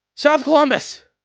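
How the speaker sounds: very high, very loud shriek of pain. Narrating a scene where a guy gets splashed in the face, his cry: screaming in pain. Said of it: "and as he like screams".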